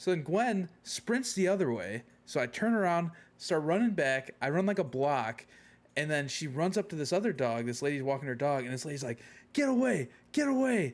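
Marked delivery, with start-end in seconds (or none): 9.5-10.9 acted-out very high, stretched, drawn-out yell. Retelling a lady walking her dog yelling at another dog: imitating a lady yelling. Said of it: "yelling at Gwen".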